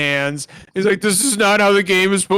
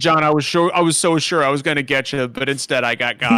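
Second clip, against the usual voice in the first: ordinary delivery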